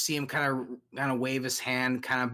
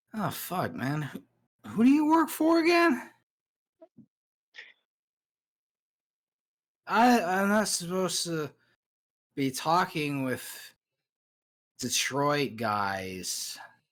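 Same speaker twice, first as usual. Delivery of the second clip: acted drunk, slurred, stumbling ramble; 4 semitones higher than usual. Voicing a drunk character questioning the player: acting drunk. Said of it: "he's pretty shit-faced".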